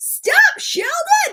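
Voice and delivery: shrieking scream, way up high.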